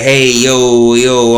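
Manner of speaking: over-the-top, exaggerated Italian New York accent. Describing the accent an English actor in the show does, Italian New York accent. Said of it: "I'm a Italian from New York type accent".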